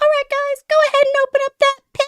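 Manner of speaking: loud, high-pitched call-out. Retelling what Lays says on the mic to the crowd: imitating Lays on the mic. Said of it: "she gets on the mic and she's like".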